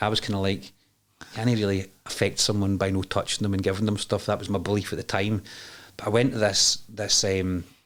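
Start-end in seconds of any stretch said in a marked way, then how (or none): none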